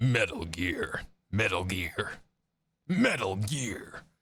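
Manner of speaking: voice gone deep. Speaker testing his voice after it has gone deeper, deeper voice. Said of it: "my voice has gotten deeper because of it".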